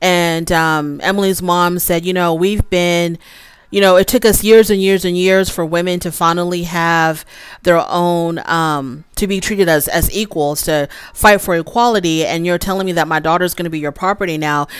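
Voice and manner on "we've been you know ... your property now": ordinary talk, nothing marked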